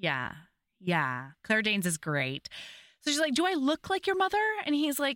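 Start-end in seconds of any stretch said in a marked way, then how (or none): 3.3-4.4 sassy tone, higher pitch. Retelling how the star answers the man who fell on her: imitating a sassy retort. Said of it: "the star is so sassy and takes no shit".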